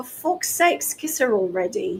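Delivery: put-on soft, under the breath, strongly British accent. Retelling what Richard Barker said to the speaker and Alan, in his British accent. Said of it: "in his very British accent".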